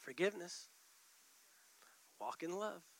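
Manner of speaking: very quiet, still, small, breathy whisper. Acting out how the Holy Spirit answers: quiet Holy Spirit voice. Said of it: "the Holy Spirit's just quietly".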